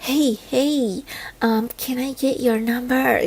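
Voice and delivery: slow, drawn-out, hushed half-whisper. Retelling a man asking for a number during a workshop: imitating someone half-whispering. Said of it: "he was whispering".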